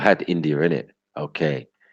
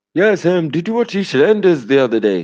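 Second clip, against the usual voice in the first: put-on Delhi accent, very high and raised; 12 semitones higher, 5 dB louder than usual. Playing someone who claims to be called Brian, speak in a put-on Delhi voice. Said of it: "Delhi voice".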